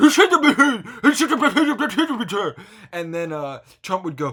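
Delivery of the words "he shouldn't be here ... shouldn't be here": very high, very loud puppet voice, babbling. Acting out a planned sketch scene: Swedish Chef voice. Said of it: "the Swedish chef would go".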